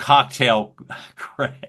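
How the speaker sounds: talking while stifling laughter. Asking a question and saying a nickname, laughing while talking. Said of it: "I'm having a hard time saying that without laughing".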